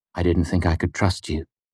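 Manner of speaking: ordinary delivery, nothing marked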